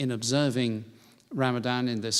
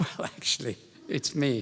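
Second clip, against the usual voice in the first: mock-humble but slightly proud tone. Retelling own answer to a man who wanted to meet the Archbishop: imitating own humble but slightly proud reply. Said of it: "the sort of very humble bit, slightly proudly".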